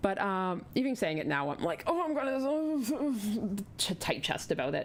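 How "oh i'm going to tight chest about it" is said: put-on slow, high elderly man's voice. Talking about asking a doll painter to paint her dolls, old man voice. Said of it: "That's my old man voice".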